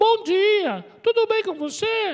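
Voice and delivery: squeaky, very high cartoon character voice. Demonstrating how a certain kind of person greets someone, cartoon voice. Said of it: "É uma voz de desenho animado".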